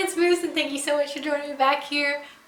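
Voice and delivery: voice cracking. Opening a video and greeting viewers, voice cracking. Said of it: "Why did my voice just break?".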